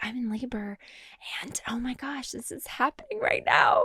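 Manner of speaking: high, soft, self-conscious little whisper. Retelling a video made in labor in the car: imitating own whisper. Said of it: "'cause I'm just whispering".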